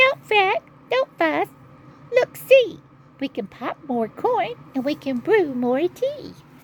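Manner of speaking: tiny, very high, squeaking mouse voice. Reading a story aloud, the mouse answering the bear, in a squeaky mouse voice. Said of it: "Mouse squeaks".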